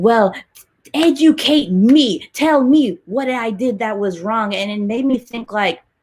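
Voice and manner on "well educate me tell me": loud, sudden yell shouted right out. Retelling how Sharon Osbourne reacted in an argument: imitating Sharon Osbourne yelling. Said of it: "She just started yelling".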